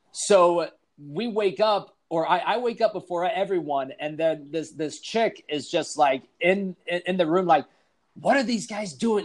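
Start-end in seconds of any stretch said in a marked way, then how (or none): 8.2-9.2 imitated loud whisper-yell, higher and faster. Retelling a guy's girlfriend finding them in the room, imitating a whisper-yell. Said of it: "she's whispering".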